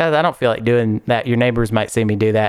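normal talking voice

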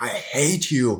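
small, strained, half-screamed mild yell. Retelling a character's last moment screaming at Obi-Wan: imitating a scream. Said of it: "he's screaming at Obi-Wan".

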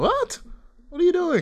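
very high, startled squeak. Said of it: "I'm like".

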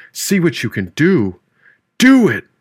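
loud, high-pitched yell, voice swinging wildly. Reading a story aloud, voicing a character who yells at another. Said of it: "he yelled".

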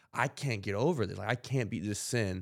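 put-on frustrated tone. Retelling Paul's words from a section of scripture: imitating Paul's frustrated tone. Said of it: "almost, like, a frustrated tone".

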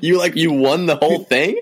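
incredulous disbelief, pitched high and loud.

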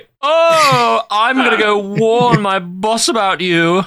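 extremely loud announcing voice with drawn-out oh. Recapping a scene with a man with a gun standing there: retelling a loud announcement. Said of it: "extremely loudly".

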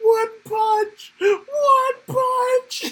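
put-on very high, slow, drawn-out hysterical laughing shout. Retelling a favorite comic moment: imitating Blue Beetle laughing hysterically. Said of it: "Blue Beetle just laughing hysterically going".

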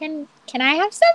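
piped-up, very high-pitched piping voice. Voicing Mimi piping up from across the room, in a high-pitched Mimi voice. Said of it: "her voice is so high".

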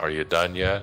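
put-on unimpressed tone, very quiet. Acting out how she spoke to her husband, imitating a quiet, unimpressed wife. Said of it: "Very unimpressed, very quiet".

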